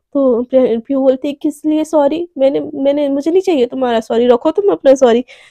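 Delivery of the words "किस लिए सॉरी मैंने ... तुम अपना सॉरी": normal talking voice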